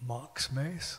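softly murmured, hushed, quiet. Retelling a gentleman asking for a person, in hushed tones. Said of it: "in hushed tones".

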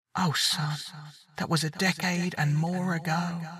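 faint, faraway, very hushed, soft, thin, gentle voice. Narrating Odysseus's dead mother answering her son, in a thin, echoing distant voice. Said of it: ""Mother?" ... The voice was hers, but it was thin and stretched somehow, and echoed like it came from a great distance away".

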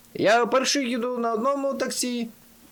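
high group yell in unison. Narrating a group of friends calling out together as one; yelled in unison. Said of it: "зарепетували".

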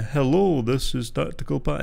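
deliberate, very slow, unhurried, drawn-out delivery. Mimicking their own early YouTube intro while listening back: speaking really slowly. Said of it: "as I spoke really slowly".

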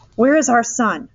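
firm, insistent, pressing, demanding tone. Mrs. eberhardt repeating her question to the doctor in the emergency ward, demanding. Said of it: "Mrs. Eberhardt demanded again".

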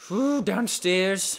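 little leprechaun voice. A player heading downstairs in a game, leprechaun voice. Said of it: "I sounded like a leprechaun".

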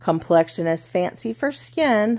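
ordinary delivery

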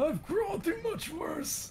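put-on voice of an elderly man. In a game, just after being caught, in an old man voice. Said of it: "He's sounding like an old man".

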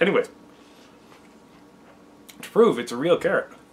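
speaking with food in mouth. Cutting a carrot for viewers on camera, talking with mouth full. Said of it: "I still got a little bit of carrot in my mouth".

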